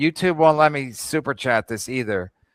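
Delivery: plain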